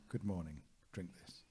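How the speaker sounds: normal talking voice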